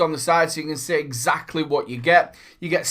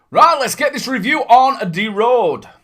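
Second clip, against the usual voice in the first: sudden shrill, loud put-on voice. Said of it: "I don't know where that came from either".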